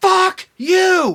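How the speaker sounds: mock yell, high and loud.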